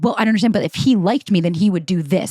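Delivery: ordinary delivery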